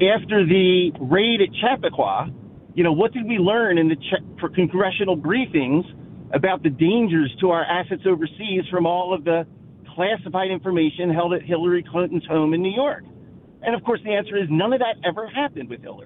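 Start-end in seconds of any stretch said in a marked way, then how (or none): none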